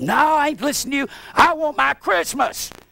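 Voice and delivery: shrill, screaming voice. Retelling what their brother-in-law screamed at them years ago, imitating someone screaming. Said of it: "started screaming at me".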